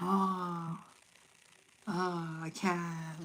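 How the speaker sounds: mock very slow, soft, deflated, defeated mopey moan. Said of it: "I'm getting that kind of energy".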